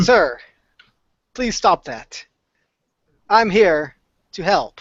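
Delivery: machine-like, mechanical robot voice. Voicing a robot character in a roleplay scene, monotone robot voice. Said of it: "in the most monotone voice, acting like a robot".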